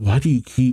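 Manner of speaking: plain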